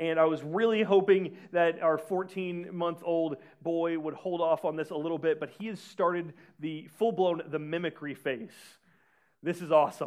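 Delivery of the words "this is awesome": ironic, insincere, sarcastic tone. Describing a new parenting phase with a young son: sarcastic. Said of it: "I'm being sarcastic in that".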